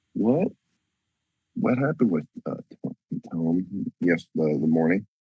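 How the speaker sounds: theatrical stage whisper. Asking another character quietly what happened that morning: half-whispering. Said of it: "whispering and everything".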